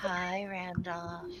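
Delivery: put-on creepy voice. Greeting a newcomer named Randolph as a joke: mock creepy greeting. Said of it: "I'll give you a creepy, uh, greeting".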